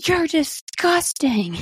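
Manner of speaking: put-on high yelling like a kid. Retelling Harper during the photos, retelling a yell. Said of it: "Like she's yelling".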